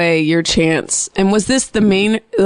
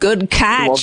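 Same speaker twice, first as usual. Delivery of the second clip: put-on Australian accent. Teaching another speaker some australian terms: put-on australian accent. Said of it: "teach you, um, some pertinent Australian terms".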